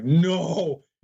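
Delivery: high, loud, desperate "no". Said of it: "And I'm like".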